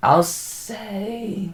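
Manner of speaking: voice cracks mid-phrase, jumping up high. Thinking aloud while naming an MLB stadium, voice cracks. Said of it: "voice crack there".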